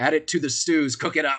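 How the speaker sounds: loud booming carrying call. Imitating how they sound ordering a new meal, in a loud booming voice. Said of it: "in a loud, booming voice".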